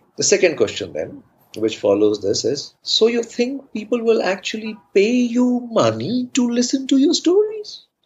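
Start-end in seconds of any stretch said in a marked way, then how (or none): 2.8-7.8 put-on very high, doubting, sarcastic tone. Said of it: "Malayalis speak with a lot of sarcasm".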